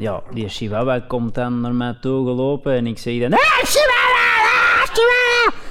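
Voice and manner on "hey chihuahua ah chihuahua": very high, loud, energetic calling out. Retelling coming home to his wife's chihuahua, reenacting calling out to it. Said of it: "ik begon dan zo echt 8 minuten te roepen".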